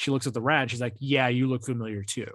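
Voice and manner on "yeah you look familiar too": acted sarcastic tone. Retelling April's reply to the rat, in a mock-sarcastic tone. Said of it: "She's being sarcastic".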